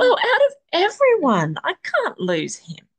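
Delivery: very high, swooping, overcome-with-emotion outburst. Talking with a friend who says they've been crying too, getting emotional. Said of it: "I'm going to get emotional right".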